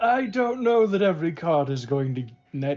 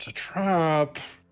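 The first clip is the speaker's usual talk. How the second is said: wary, careful, deliberate delivery, "trap" drawn out; 2 semitones higher than usual. Voicing Wilhelm leaning over carefully to warn the group: under his breath. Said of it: "very carefully and under his breath".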